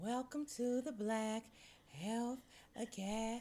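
seductive voice. After saying they're ready, the speaker delivers the welcome in a seductive voice. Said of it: "how seductive your voice was".

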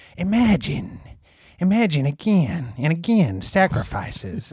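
animated delivery with wide, swooping pitch swings. Doing a quick impression for the other hosts: Dan Carlin impersonation. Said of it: "I'll do my best Dan Carlin impersonation".

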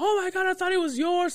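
stunned, excited squeal.

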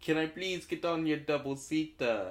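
put-on Jamaican accent. In a made-up scene about a double-seater bike, asking for a ride: Jamaican accent.

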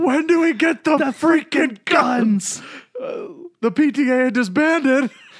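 very high, shrill, slow, drawn-out panicked voice. Quote the panicked audience member you love, Castellaneta panicked audience member voice. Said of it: "I love that Castellaneta voice".

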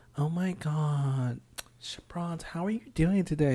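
gushing, effusive, with "God" drawn out. Retelling how people at work greet the speaker: imitating coworkers' way of talking. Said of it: "they come and talk to me and be like".

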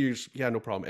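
ordinary talk

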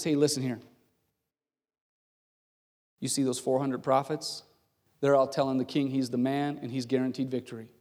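secretive, hushed stage half-whisper. Retelling a messenger warning a prophet while walking: acting out a half-whisper. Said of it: "whispers to him as they're walking down".

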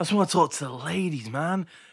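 mock weary, sapped, worn-out voice. Mimicking a man in a video, imitating a tired voice. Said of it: "he sounds so tired".

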